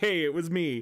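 ordinary delivery

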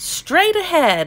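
high, excited cry. The frogs answer the chicken's question about the water: excited cry. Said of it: "the frogs cried out excitedly".

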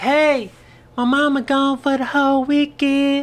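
put-on dainty, very high, slow little girl voice. Retelling what a girl said to him in the car: girl's little voice. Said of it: "Her little voice and shit".

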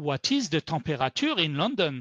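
English spoken with a French accent. Pretending to be a french tourist asking a question, french tourist accent. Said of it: "I'm going to do as if I was a French tourist in New York".

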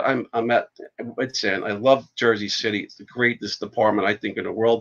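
ordinary delivery

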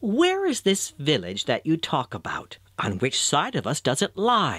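ordinary delivery

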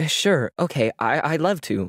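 stumbling over words. Caught off guard by a call about her apartment application, stumbling over her words. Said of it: "Sachio stumbled over her words".

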